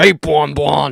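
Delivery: loud, rough, creaky character voice. Reacting to a game character's voice, imitating it: Funtime Freddy voice. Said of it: "That sounds like a voice I do".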